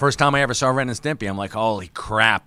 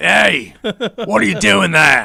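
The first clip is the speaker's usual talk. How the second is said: put-on Australian accent, higher and louder; 9 semitones higher, 6 dB louder than usual. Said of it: "had, uh, Australian accent".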